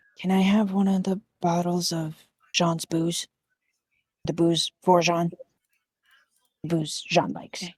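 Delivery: whispering. Voicing a character who leans over asking for booze: whispering in character. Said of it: "just kinda whispered at you".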